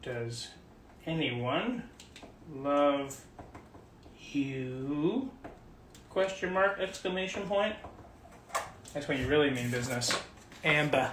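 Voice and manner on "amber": Massachusetts accent. Saying a name as they'd say it in Massachusetts: Massachusetts accent on Amber. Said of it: "as they'd say it in Massachusetts".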